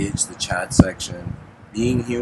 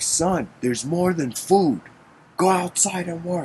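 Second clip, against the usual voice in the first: put-on, high-pitched, scolding shouted voice; 9 semitones higher than usual. Retelling an old story, father tells his son to work: imitating a father shouting. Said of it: "he shouts at his son".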